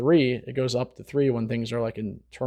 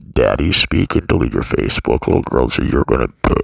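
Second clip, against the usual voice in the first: fake creepy voice, very deep, loud, booming; 11 semitones lower, 9 dB louder than usual. Telling viewers to delete their Facebook, in a put-on creepy voice. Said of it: "That was really creepy".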